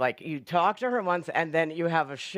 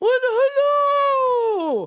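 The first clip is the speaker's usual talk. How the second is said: very high, loud, stretched-out delivery; 9 dB louder than usual. Starting a round where everyone does their version of her greeting, give your best Julia Child impression. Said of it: "do their best Julia Child".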